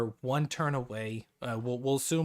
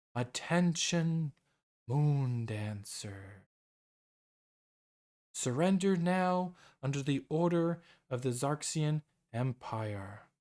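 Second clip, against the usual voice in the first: otherworldly, hauntingly angelic, eerie voice; 2 semitones higher than usual. Voicing an announcement heard clearly all over the ship, booming, hauntingly angelic voice. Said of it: "booming and almost angelic, but it's a hauntingly angelic voice".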